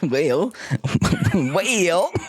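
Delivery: rural country drawl, swooping and drawn out on "well". Answering a question after panicking, country accent. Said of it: "he gets a country accent".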